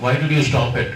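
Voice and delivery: normal talking voice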